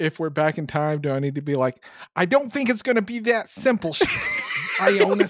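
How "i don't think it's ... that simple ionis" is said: put-on Brooklyn accent, much higher. Speaking in character, trying out an earlier episode's voice: attempted Brooklyn accent. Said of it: "I can't even do that Brooklyn accent".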